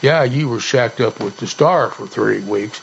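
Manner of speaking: plain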